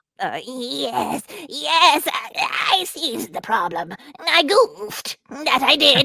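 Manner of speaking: high, wobbly, quavering imp voice. The imp, held by the neck by the god, answers in a high-pitched wobbling voice. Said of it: "said in a high-pitched, wobbling voice".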